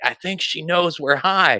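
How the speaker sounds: strong whisper. Retelling leaning to a friend at the store counter: imitating own past whisper. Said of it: "I thought I was whispering".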